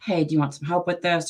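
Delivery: ordinary delivery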